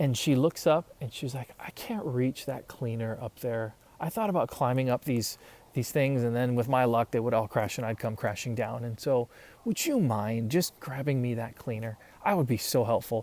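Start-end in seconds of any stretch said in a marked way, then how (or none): none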